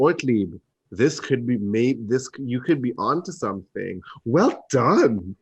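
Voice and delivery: condescending, patronising, talking-down tone. Player character praising a fellow character's idea, very condescending. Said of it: "I say very condescendingly".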